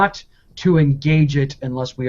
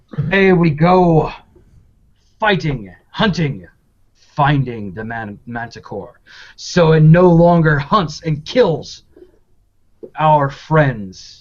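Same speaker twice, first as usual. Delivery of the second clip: grand, rallying proclaiming tone, kept contained. Narrating Thurl's announcement to everyone before the manticore hunt: Thurl announcing very loudly. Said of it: "announces in a very loud voice".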